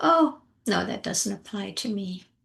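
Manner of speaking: casual, offhand and nonchalant. Coaching listeners to say the phrase together in a nonchalant way. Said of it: "say it in a, you know, a nonchalant way".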